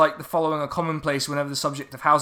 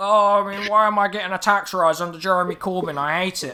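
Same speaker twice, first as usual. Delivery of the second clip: weedy, whining voice; 3 semitones higher than usual. Retelling what a millennial cried about in an exchange, in a weedy complaining voice. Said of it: "give him such a weedy voice".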